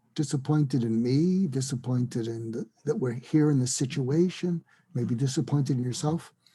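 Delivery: ordinary delivery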